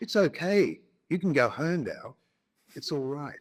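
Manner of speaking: put-on posh, plummy English accent. Retelling what an official said to you: imitating a perfect plummy english accent. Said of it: "with a perfect English accent, like a, a plumb in his voice".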